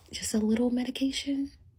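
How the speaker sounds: very quiet half-whisper. Retelling a teacher suggesting medication for a son: imitating someone half-whispering. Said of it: "I'm gonna whisper it".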